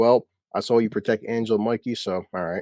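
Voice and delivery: ordinary talk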